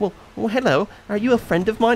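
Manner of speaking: put-on high, sweet, innocent young boy voice.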